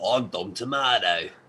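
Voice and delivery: put-on thick, silly, full-on broad ocker Australian accent. Retelling how he introduced himself, in a really ocker australian accent. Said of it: "I said in a really ochre Australian accent".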